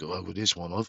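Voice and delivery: hushed half-whisper under the breath. Narrator voicing Johnny leaning in to another character, Johnny half-whispering. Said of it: "whispers in".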